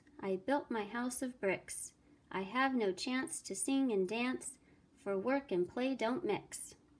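usual speaking voice

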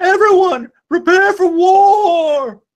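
very high drawn-out shout with war stretched long. Voicing a character who turns to address everyone: shouting out. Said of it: "she turns and she shouts out".

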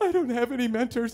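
acted, high, whimpering, depressed little voice. Telling the listener how they first came up to them; imitating own past whimpering. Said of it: "I just started whimpering".

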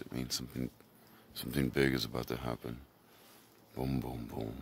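deep, resonant, dropped-down low register. Talking about heading out to do cool stuff: deep voice. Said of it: "When I get deep voice like this".

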